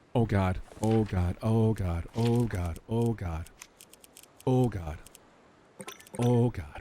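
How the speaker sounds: frightened, very slow, drawn-out, repeating. Playing a game and suddenly in danger: scared. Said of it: "I'm so scared right now".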